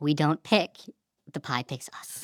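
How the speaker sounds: low, hushed, mysterious mystic voice, oracle-like.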